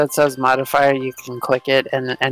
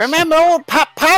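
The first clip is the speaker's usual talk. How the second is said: put-on very high-pitched old grandpa character voice; 4 dB louder than usual. Voicing a granddad who speaks to his grandson: granddad character voice. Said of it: "It's your granddad".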